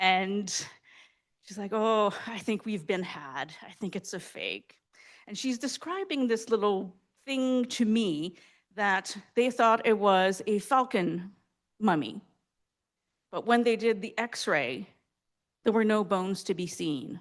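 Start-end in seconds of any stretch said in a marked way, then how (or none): 1.7-4.8 genteel, buttoned-up, prim New England lady manner. Retelling what a predecessor said about a fake mummy: imitating Mary Ellen Souls, prim New England lady. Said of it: "this prim and proper New England lady".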